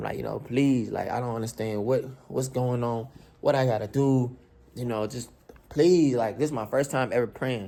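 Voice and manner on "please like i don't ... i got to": put-on tearful, crying, pleading tone. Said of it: "I sat in the car and I cried".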